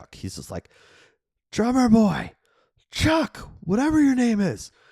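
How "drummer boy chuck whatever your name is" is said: mock shrill holler, pitched way up, yelled. Retelling a film scene where a character calls to another: imitating a character yelling. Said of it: "yells to Chad to turn the water off".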